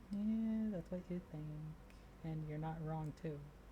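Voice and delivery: barely audible, muttered under the breath. Playing a character who answers a guard and heads upstairs: muttering under breath. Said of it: "say under my breath where he can't hear".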